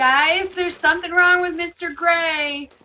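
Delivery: calling out loudly. Calling out through an opened door to the others: yelling out. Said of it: "open up the door and yell out and say".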